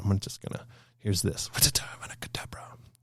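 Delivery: hushed, quiet whisper. Retelling what was said to a wife during the show: imitating whispering. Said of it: "I was just whispering to my wife".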